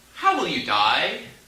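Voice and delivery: ordinary talk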